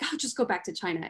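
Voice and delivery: ordinary delivery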